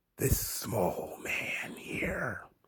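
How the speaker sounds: slow, low, menacing whisper.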